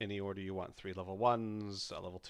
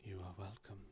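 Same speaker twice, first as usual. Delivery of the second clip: gentle, very soft, barely audible half-whisper; 10 dB quieter than usual. Voicing a god answering a character's thanks: gentle half-whisper. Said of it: "hear a whisper passing through the clouds".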